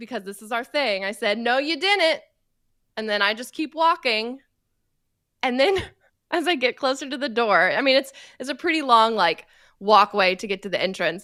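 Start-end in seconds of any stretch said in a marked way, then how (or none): 1.4-2.2 high, yelled, called-out voice. Walking away, retelling yelling back at someone in a car: retelling a yell back. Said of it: "And I yell back".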